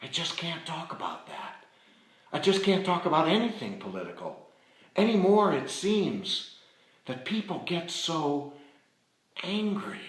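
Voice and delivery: hushed, high whisper. Retelling how a woman leaned in close to answer him: retelling a whisper. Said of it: "she leans in close and she whispers".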